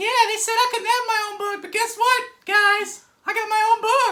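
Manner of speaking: loud, high-pitched squeak. Hosts discussing how Spider-Woman sounds; one does a Minnie Mouse voice. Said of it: "That's Minnie Mouse".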